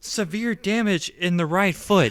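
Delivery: high, robotic, automated computer voice. Recounting a scene to a co-speaker, doing the robotic computer lady voice. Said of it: "the robot voice lady was like".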